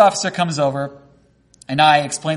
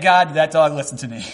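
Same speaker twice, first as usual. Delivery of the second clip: ordinary talk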